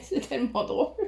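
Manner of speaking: laughing while talking. Repeating own words amid apologies for laughing: laughing while talking. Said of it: "désolée de rire comme une bécasse".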